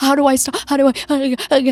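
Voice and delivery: put-on high, gasping, hyperventilating, unstoppable crying sobs. Retelling a movie scene where she breaks down: imitating hyperventilating crying.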